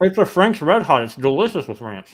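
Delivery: very loud speech through a mouthful. Eating with others, the speaker talks with a full mouth. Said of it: "Don't eat with your mouth full".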